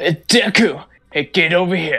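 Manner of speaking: gruff shouted anime voice. Trying a good impression, calling out to Deku: Bakugo impression. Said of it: "I should try to do a good impression of Bakugo".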